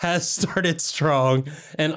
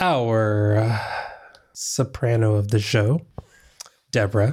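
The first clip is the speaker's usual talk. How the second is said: put-on radio announcer, very slow, unhurried, drawn-out; 3 semitones lower than usual. Introducing a listener's update: put-on NPR announcer voice. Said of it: "I don't know why I started talking like this".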